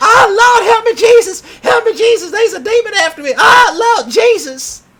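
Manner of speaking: shrill, very high, very loud, drawn-out scream. Retelling how one of them fled the woods: imitating someone screaming. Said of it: "one of them was screaming".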